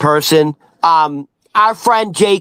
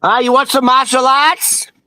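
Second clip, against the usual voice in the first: pitched-up New England Boston accent; 7 semitones higher than usual. Showing how someone with a boston accent says martial arts, in a boston accent. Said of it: "if you have the fucking New England Boston accent".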